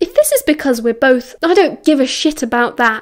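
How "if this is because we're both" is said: usual speaking voice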